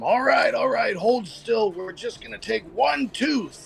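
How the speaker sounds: high-pitched, shouted yelling. Voicing a character who grapples a creature, yelling at someone. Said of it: "And I start yelling at him".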